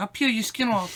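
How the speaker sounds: very high-pitched, loud, squeaky threatening voice. Imitating a boxer threatening someone: Mike Tyson impression. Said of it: "he's like".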